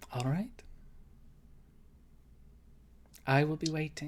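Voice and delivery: expressionless, flat, level deadpan delivery. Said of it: "keeps a kind of a flat face and says".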